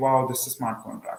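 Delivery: plain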